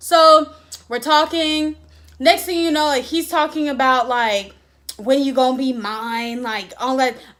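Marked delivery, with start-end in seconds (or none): 5.0-6.4 put-on slangy street-talk voice.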